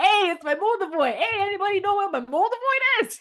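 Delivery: put-on New York accent, pitched high. Imitating a guy peeking through the curtains, new york accent. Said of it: "like New York".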